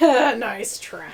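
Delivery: patronizing quiz-host tone, first word drawn out. Imitating Alex Trebek being condescending to contestants: condescending Alex Trebek impression. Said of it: "He's so condescending. He'll be like".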